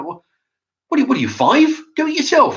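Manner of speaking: mock loud under-breath mutter. Retelling a remark made when they asked another man about salt and vinegar, a loud mutter. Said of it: "kind of a loud, under my breath kind of voice".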